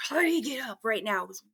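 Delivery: menacing, raspy, close, urgent scary voice. Retelling being woken by a voice right in the ear: imitating a scary raspy voice. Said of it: "scary sounding, kind of like".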